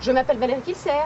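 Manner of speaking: quick, assured, fast and smooth brisk delivery.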